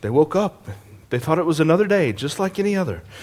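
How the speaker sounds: quiet, hushed television narrator. The speaker illustrates a point by slipping into a Dateline narrator voice. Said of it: "Dateline narrator voice".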